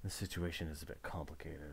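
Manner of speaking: whispering. Voicing a character who leans over and whispers into another's ear: whispering. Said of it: "starts whispering to, into your ears".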